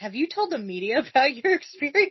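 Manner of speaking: heavily sarcastic, high sing-song tone. Quoting a cartoon character's line about telling the media: imitating Fred sarcastically. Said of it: "very sarcastically, Fred asks".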